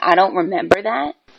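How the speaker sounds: put-on dismissive delivery. Arguing with Lauren about a remark, imitating a dismissive tone. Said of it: "saying in a dismissive tone".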